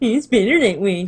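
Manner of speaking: muttered aside, under the breath. A player speaks the character's aside during silent flirting, muttered under her breath. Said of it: "Vivian says under her breath".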